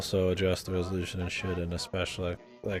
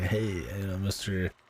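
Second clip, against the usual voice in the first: put-on wise-guy voice. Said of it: "a wise guy kinda".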